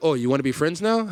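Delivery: ordinary talk, nothing marked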